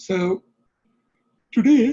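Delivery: talking through a yawn. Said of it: "I'm sorry, I'm yawning today".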